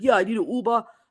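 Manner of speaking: put-on heavy New York accent, laid on thick. Retelling how her husband called for a car: imitating husband's thick New York accent. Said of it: "my husband's like this psycho New Yorker with a thick accent".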